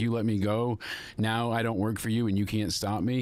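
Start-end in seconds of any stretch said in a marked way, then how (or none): none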